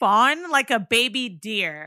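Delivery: put-on snippy voice. Retelling a phone call, the speaker mimics Fawn's reply, mocking Fawn's snippy attitude. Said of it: "I hate when people have attitude".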